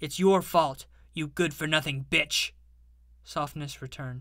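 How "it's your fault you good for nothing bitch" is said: sudden angry outburst, louder. A man turns on a woman who has been speaking to him, angry outburst. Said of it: "Anger overtook him".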